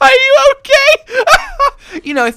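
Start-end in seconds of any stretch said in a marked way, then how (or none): 0.0-1.1 high, loud laughing shout of exaggerated mock concern. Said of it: "and I'm like".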